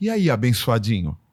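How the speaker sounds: put-on low, sweet, honeyed, friendly voice. Retelling how a woman talked to people, imitating her pleasant way of talking. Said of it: "ela falava de um jeito que era mais agradável".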